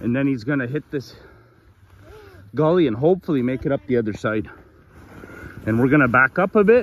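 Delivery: winded, breathless, out-of-breath talking. Narrating as he tries to make it across a gully, out of breath. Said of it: "we're out of breath".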